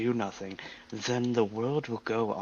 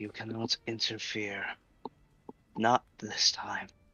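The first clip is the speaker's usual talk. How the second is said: ethereal, echoing otherworldly voice; 3 dB quieter than usual. In a scene, a voice speaks to Rana in an echoey ethereal voice. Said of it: "like ethereal voice is talking to this one".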